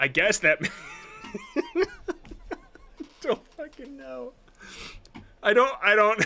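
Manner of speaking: talking through laughter. Reacting to a video about where a jet's gun sits, laughing while talking. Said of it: "I'm so sorry for laughing at this".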